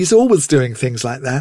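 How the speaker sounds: plain reading voice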